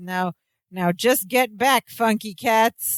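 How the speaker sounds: slow, drawn-out, calming pleading tone.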